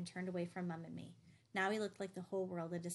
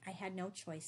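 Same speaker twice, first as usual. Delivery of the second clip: ordinary delivery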